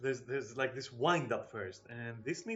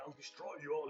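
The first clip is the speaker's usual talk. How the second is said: warrior battle cry; 3 semitones higher, 6 dB quieter than usual. Quoting a game character's combat line, imitating a Norn male. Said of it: "a Norn male going like".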